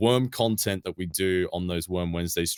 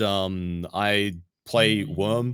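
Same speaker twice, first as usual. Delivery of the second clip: ordinary talk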